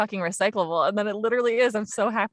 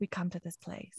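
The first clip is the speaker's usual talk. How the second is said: soft, airy, breathy hushed whisper; 3 semitones lower, 14 dB quieter than usual. Retelling how she delivers the line in the ad: Nicole Kidman impression. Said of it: "she's just like".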